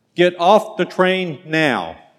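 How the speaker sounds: put-on, loud, gruff, slow barked delivery. Retelling the train conductor's order to get off: imitating a loud gruff voice. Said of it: "in a loud and gruff voice said".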